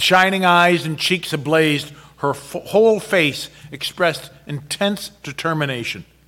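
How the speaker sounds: plain reading voice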